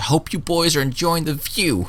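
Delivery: very high-pitched, yelled-out call. Voicing a character who calls out to the boys following her: yelling out in character. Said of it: "kinda yells out".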